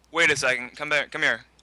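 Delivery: loud, sudden shouted call-out. Voicing a character who calls travelers back from the door: shouting out. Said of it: "he shouts out".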